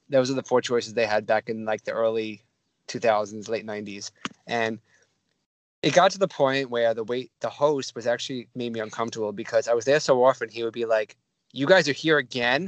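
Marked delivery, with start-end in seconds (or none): 11.5-12.7 mock patronizing, unimpressed, condescending tone. Retelling how a host greeted regular visitors, mimicking a condescending tone. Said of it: "condescending tone".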